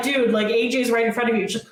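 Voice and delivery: ordinary talk, nothing marked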